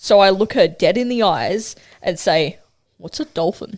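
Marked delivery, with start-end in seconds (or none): 3.0-3.8 dim-witted, goofy, stupid, dopey put-on voice. Retelling what you said back to your nan in traffic, in a stupid, dopey voice. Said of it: "In a stupid, dopey voice".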